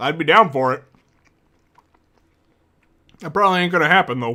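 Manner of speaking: talking while chewing. Chatting with the stream audience while eating, talking while chewing. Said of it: "Sorry, I'm munching".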